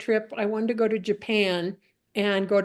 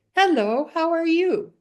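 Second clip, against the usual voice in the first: put-on high, raised little child's voice; 8 semitones higher, 5 dB louder than usual. Retelling a walk over a bridge, voicing a greeting in a little child's voice. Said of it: "this little child's voice say".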